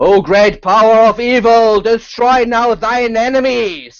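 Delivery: loud, sudden, thundering bellow. A voice of unknown source fills the room, thundering shouting voice. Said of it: "a thundering voice, kind of shouting".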